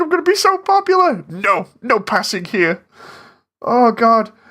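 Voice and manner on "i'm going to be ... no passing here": petulant, huffy, stroppy character voice, high and swooping. Retelling a character's line after calling him stroppy: imitating a stroppy character. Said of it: "He's like".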